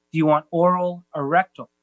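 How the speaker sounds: plain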